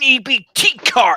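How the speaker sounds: high, loud, slow angry snarl.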